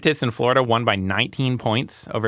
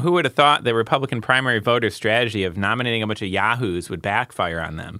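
ordinary talk, nothing marked

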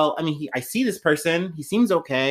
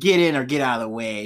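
put-on old man voice, lower pitch; 3 semitones lower than usual. Imitating a leader urging states to act: old man like Clint Eastwood. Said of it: "very old man about it".

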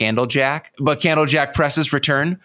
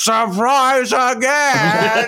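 cartoonish put-on demon voice, much higher pitch; 9 semitones higher than usual. Retelling a movie scene, the speaker voices the demon: cartoonish demon impression. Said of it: "Your impression of the demon sounds like any character on South Park ever".

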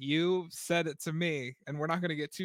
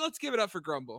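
plain

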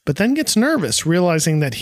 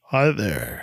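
put-on bass voice, very low and deep; 8 semitones lower, 4 dB quieter than usual. Reading a story aloud, a character greets a girl: deep voice. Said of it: "with a deep voice says".

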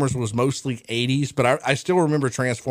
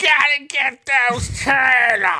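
very high, lisping cartoon villain voice, lisped s; 12 semitones higher, 4 dB louder than usual. Talking about how Krang sounded, the speaker does a Krang impression. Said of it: "You do a really good Krang impression".

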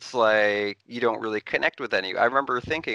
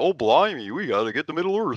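silly, goofy put-on Cockney accent, pitched high; 5 semitones higher than usual. Panel discussing casting, imagining a miscast actor, in a goofy accent. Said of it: "Doing some goofy accent".

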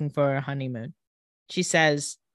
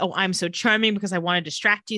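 usual speaking voice

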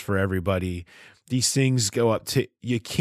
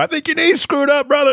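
very high, shrill, loud screamed holler; 5 dB louder than usual. Mocking a doctor who yells outside the office: imitating someone screaming. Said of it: "screams to you".

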